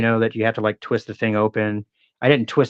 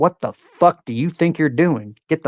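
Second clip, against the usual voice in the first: full dad-mode scolding, pitched up; 5 semitones higher than usual. Retelling confronting a kid on a balcony near his daughter; retelling going into dad mode. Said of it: "I went into dad mode".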